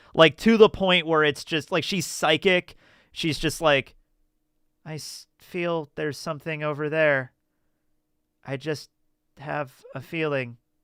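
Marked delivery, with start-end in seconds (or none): 4.9-10.6 mock catatonic, subdued, flat deadpan monotone. Retelling how the movie's lead actress delivers her lines: imitating a deadpan delivery. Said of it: "she plays it super deadpan and, like, catatonic".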